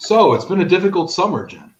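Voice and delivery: put-on solemn voice. Turning from party talk on the show to the other host, in a put-on serious voice. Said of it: "Let me get my serious voice on".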